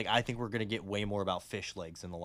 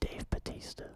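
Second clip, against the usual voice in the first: hushed, intimate whisper. Revealing a casting pick for the villain to the other speaker: whispering. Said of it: "I'm gonna whisper in your ear".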